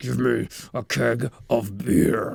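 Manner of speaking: very deep, slow, rough, drawn-out growl. Retelling a scene where a character's voice turns deep and growling: imitating a deep growling voice. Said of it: "his voice gets real deep".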